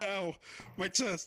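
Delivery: snorting laughter while talking. Being teased by friends, laughing through the nose while talking. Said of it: "I'm clearly laughing out of my nostrils".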